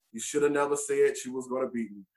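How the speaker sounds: soft, hushed stage whisper, still voiced, kept low. Retelling what the rival said after winning: imitating someone half-whispering. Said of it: "he just whispers in my ear".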